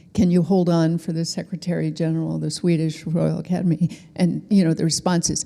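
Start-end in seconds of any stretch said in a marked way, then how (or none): none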